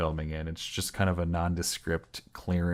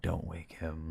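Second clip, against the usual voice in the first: put-on creepy low child whisper, quieter; 7 dB quieter than usual. Retelling a film scene where a child speaks: imitating Samuel's creepy low whisper. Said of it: "really creepy, like, low whisper".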